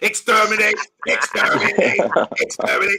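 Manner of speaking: put-on sci-fi alien invader voice, war-cry yell. Comparing a team to invading Daleks: Dalek voice. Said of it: "Bournemouth come like the Daleks".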